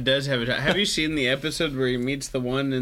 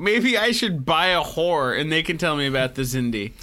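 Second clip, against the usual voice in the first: ordinary delivery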